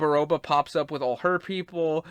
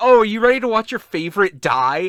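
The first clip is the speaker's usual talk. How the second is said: loud, gleeful, giddy, thrilled put-on excitement; 4 semitones higher, 7 dB louder than usual. Recapping a story, the speaker acts out a character eager to kill: imitating gleeful excitement. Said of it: "she's literally getting so excited".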